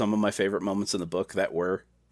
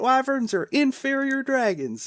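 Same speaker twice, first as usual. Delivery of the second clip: put-on angry outburst voice, pitched higher. Retelling a book scene where Vern gets super angry: imitating Vern getting super angry. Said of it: "just gets super fucking angry".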